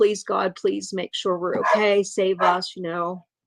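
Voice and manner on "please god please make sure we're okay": acted-out prayerful delivery. Speaker retelling lying over someone in the bleachers, reenacting praying. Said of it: "I just start praying".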